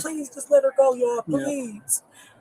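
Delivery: slow, tearful, crying, begging plea. Retelling a fight to police, quoting a bystander: imitating a crying plea. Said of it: "She was begging them, crying".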